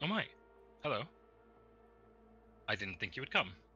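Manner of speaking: taken-aback, astonished hello. Voicing a lizard lady who sees a player appear: surprised. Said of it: "looks like, um, like, surprised".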